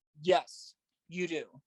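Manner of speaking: dead serious, very stern, firm, acted out. Retelling what the officials answered when asked "Do I have to?": imitating a very stern reply. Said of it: "very, very stern".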